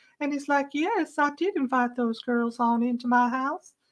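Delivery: put-on very high, slow, creepy childlike voice. Act out a creepy, childlike man's admission, imitating his really high-pitched voice. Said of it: "he talks like this with a really high-pitched voice".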